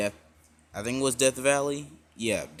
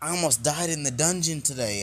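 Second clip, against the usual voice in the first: mock eager, excited, enthusiastic delivery, pitched up; 5 semitones higher than usual. Retelling a scene where Bell comes home smiling: imitating Bell, enthusiastic. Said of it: "with a very enthusiastic look on his face".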